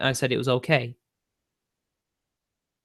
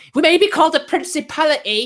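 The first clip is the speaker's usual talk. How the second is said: high-pitched Welsh accent impression. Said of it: "talking to this Welsh nationalist, like".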